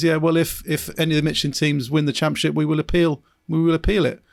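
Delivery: ordinary talk, nothing marked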